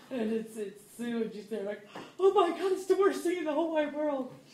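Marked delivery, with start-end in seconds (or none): 2.2-4.3 very high, very loud screaming and sobbing wail. Retelling what Sue said at the door, imitating Sue screaming and crying. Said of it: "She was screaming and crying".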